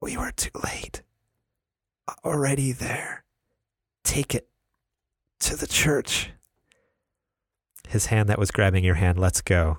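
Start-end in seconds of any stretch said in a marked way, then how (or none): 0.0-6.3 barely audible, agonized dying whisper. Narrating a story as a dying man gives his last words, faint agonized whisper. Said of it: "In an agonizing voice, faint as a whisper".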